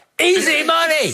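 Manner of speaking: high, mock scream, shouting.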